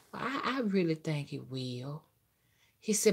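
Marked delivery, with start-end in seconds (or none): 0.1-2.0 soft, salivating, lustful mock tone, hungry-sounding. Retelling how a man sounded, imitating a lustful, salivating voice. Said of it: "That's what he sounded like".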